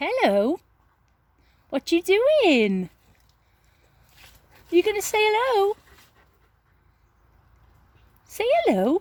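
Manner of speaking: very high, squealy, sing-song pet-talk voice. Speaker greets their animals while showing them: high-pitched squealy voice. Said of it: "I talk to them in a bit of a high-pitched".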